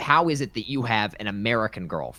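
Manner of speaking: really judgmental, disapproving, judging tone. Retelling a border interrogator's question about the girlfriend: imitating a judgmental officer. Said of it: "really judgmental".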